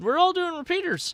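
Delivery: pushed-up, high pitch. Retelling what Jason said on the drive home: Jason impression. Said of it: "that was the best Jason impression ever".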